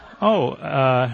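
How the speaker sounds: ordinary talk, nothing marked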